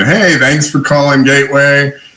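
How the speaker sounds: friendly, really nice lady voice. Recalling a company's phone greeting, imitating the really nice lady voice. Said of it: "this like really nice lady kind of going".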